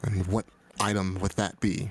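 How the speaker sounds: soft, soft-spoken voice. Game master speaking as a character, asking the players a question: soft voice. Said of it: "she's gonna say in a soft voice".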